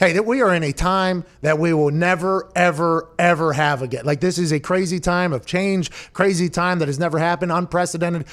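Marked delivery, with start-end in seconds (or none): none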